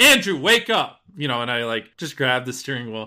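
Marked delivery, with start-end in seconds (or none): 0.0-1.0 loud, high-pitched shouted yell. Retelling yelling at the driver from the passenger seat: retelling a yell. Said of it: "I just yell".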